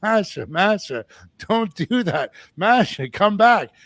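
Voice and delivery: loud, high, drawn-out yell. Retelling yelling at someone to come back during a confrontation: imitating own yelling.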